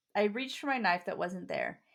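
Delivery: ordinary delivery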